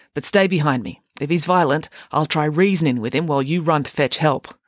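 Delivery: plain reading voice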